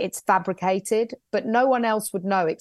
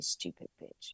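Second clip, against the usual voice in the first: muttered under the breath, much quieter. Performer retells a muttered aside on stage, saying it under the breath. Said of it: "I say it really under my breath".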